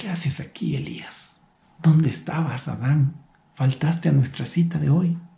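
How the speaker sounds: tender, soft, loving, despairing fatherly voice. Voicing a father who has lost his son; loving, desperate father's tone. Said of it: "Es en un tono de un padre amoroso".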